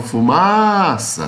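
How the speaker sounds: called out, long "ma" in fumaça. Calling the word like a distant person's name: calling out fumaça, drawn-out ma. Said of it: "chama a palavra fumaça como se fosse o nome de alguém que estivesse distante".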